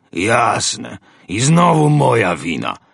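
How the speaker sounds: slow, surly, sullen grumble. The pirate answers Roland, who is urging him to leave, grumbling. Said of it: "burknął pirat".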